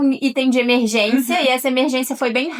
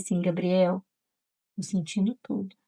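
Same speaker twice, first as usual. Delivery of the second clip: very soft, barely there, hushed half-whisper; 4 semitones lower, 9 dB quieter than usual. Retelling a half-whispered remark to a husband during childbirth: retelling a half-whisper. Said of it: "falar bem baixinho com ele assim".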